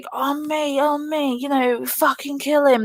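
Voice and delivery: put-on raving yell, high and frantic screaming. Retelling how a teammate in a game screamed over the mic: imitating a player screaming. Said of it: "screaming down the mic at me".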